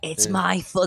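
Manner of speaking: put-on anime-style hero character voice. Trying out voices for a character's line, anime voice. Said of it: "That's more his anime voice".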